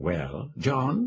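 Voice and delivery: soft, husky, hushed, amused and intimate. Reading a woman's greeting to John aloud: soft, husky, amused voice. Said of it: "in that soft, husky, amused voice".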